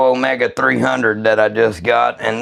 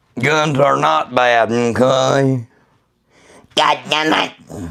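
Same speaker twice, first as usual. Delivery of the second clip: put-on cartoon child voice. Talking to viewers while live, slipping into a Cartman voice. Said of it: "I got my Cartman on".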